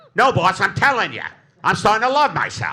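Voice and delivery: put-on 1930s old-time gangster voice. Acting out a self-help gang in the nineteen thirties: 1930s gangster voice. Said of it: "a self-help gang in the nineteen thirties".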